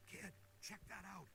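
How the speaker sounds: whispering. Ray, hunting a ghost, points something out to the kid, whispering. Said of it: "Why are you whispering?".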